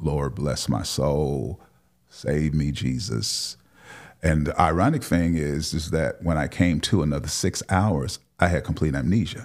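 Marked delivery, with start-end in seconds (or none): 0.0-3.6 very slow, long drawn-out delivery. Retelling own words on sitting up in the hospital: imitating own very slow tone. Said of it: "in very slow, very slow tone".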